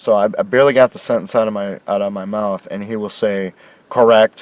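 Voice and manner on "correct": mock quick, clipped, mechanical, robotic tone, louder. Retelling Mister H's instant agreement: imitating a quick, mechanical "correct". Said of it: "that quickly and that mechanically".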